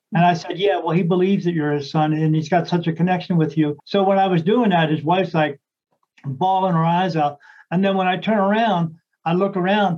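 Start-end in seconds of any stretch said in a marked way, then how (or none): none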